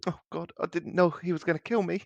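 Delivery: high, weepy, tearful, between sniffles. Narrating a scene, the speaker voices a figure in the corner: sniffling, tearful. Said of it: "There's a sniffle from the corner".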